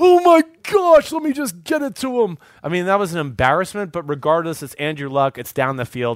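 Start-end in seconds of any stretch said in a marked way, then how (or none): 0.0-2.4 choking, very high, drawn out and slow. Retelling a throw by a wide-open receiver: imitating Andrew Luck choking. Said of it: "I honestly thought he was choking to death".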